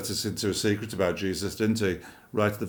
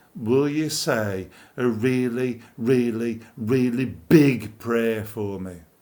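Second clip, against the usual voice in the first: loud, half-mocking, theatrical stage cry; 2 semitones higher, 4 dB louder than usual. Speaker retells what a man asked him before an assembled audience, imitating a semi-mocking loud cry. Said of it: "in a sort of semi-mocking kind of way".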